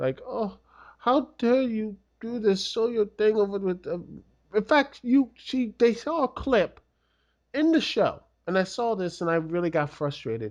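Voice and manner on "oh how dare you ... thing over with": put-on weepy crybaby wail, crying, little-girl sobbing. Retelling a scene where Lana cries: imitating Lana crying. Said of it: "you have Lana crying like".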